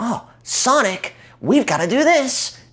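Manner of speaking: very high, swooping, cartoonish anime voice. Complaining about a Sonic character's voice, doing a Tails anime voice. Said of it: "It's such an anime voice, like".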